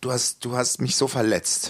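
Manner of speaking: calm, soft and wounded. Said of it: "Hat sie das ganz ruhig gesagt".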